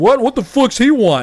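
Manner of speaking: exaggerated fake drunk voice, pitched way up, loud. Retelling faking extra drunk when told a cop was looking: imitating own act of extra drunk. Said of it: "acting, like, extra drunk".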